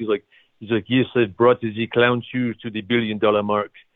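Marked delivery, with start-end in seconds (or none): 1.4-3.7 put-on classic French accent. Retelling what a company co-founder once said, in a classic French accent. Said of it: "classic French accent".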